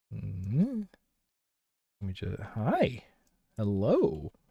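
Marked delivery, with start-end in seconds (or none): 2.5-4.2 sing-song pet-talk voice. Greeting everyone at the start: voice for talking to the cat. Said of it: "This is a voice I use when I'm talking to the cat".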